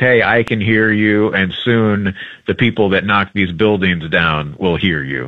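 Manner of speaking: ordinary talk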